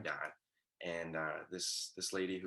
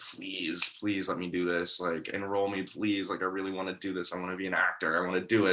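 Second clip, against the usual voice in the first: put-on pleading, begging tone, said louder; 10 dB louder than usual. Retelling begging parents on the car ride home: imitating own past begging. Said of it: "I was, like, begging them".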